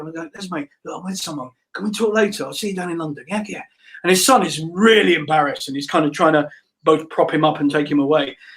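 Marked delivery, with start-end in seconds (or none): 0.0-3.6 hushed half-whisper, kept under the breath. Retelling a run-in with Les, the speaker half-whispers in his ear: retelling a half-whisper. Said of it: "I'm whispering his ear".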